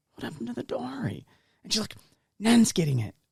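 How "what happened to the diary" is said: very soft, hushed half-whisper. Speaker retells what she half-whispered to her during the gift opening, retelling a half-whisper. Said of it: "I like whispered to her".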